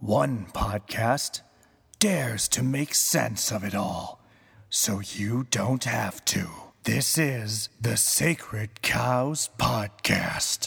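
mildly creepy, semi-spooky announcer voice. Podcast host voicing the disembodied intro announcer, in a half-scary voice. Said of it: "half scary voice".

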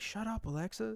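high hushed whisper. Retelling talking to alexa while trying not to disturb her: retelling a whisper. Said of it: "I'm whispering".

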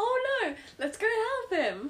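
mock very high, swooping, delighted, chirpy tone. Teasing another speaker by repeating their line, mimicking a happy 'oh no'. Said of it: "You sound so happy about it".

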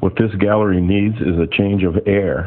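usual speaking voice

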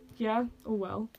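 put-on smugness. Retelling how a man stood there with his folder and apple, mock-smug. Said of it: "being all smug".

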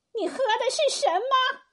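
very high, loud, roaring, bellowing voice. Reading Eunuch Gao suddenly standing up to question someone, roaring. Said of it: "吼道".

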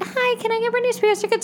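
put-on very high, babyish child voice. Acting out herself at age seven asking a question, babyish child voice. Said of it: "I'm 7, so I sound like a baby".

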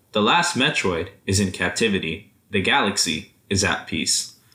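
normal talking voice

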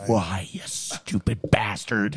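loud whisper-yelling delivery. Showing how he should play the scene, American Psycho whisper-yelling. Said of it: "the whisper yelling like he does in like American Psycho".

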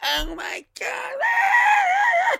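very high, very slow, fake excited shriek. Retelling two people meeting in New Orleans: acting out fake excited screaming. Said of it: "put on this show of screaming".

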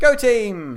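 very loud, high-pitched, rallying cheering shout. Voicing a character standing behind the party: yelling as Plisetsky.

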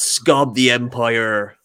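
otherworldly, strange alien creature voice. Praising favorite Star Wars aliens, imitating Star Wars alien voice. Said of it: "and they talk like this".

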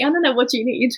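put-on flawless, spot-on British accent. Retelling how people replied in english: imitating a perfect british accent. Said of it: "with, like, the perfect British accent".

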